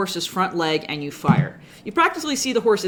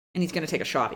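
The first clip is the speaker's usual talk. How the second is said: ordinary delivery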